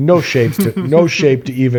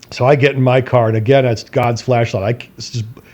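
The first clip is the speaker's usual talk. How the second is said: plain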